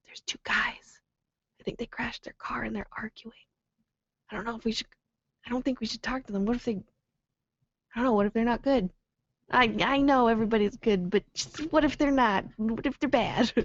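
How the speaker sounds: halting, rambling stage half-whisper throughout. Recounting spotting two strangers and turning back to Steve: retelling a half-whisper. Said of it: "And I would whisper to him like".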